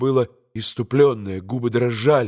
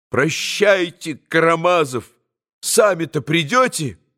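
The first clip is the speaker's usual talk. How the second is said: curt, sharp, angry tone, pitched high; 5 semitones higher than usual. Narrator reads a woman shouting at a man, sharply and angrily. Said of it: "резко и сердито крикнула на Лёше".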